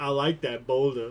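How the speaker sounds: put-on cartoon donkey voice. Comparing another speaker's line to a cartoon quote: Donkey voice. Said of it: "with the exact same cadence as Donkey going".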